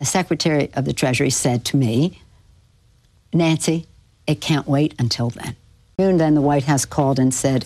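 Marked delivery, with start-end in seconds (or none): none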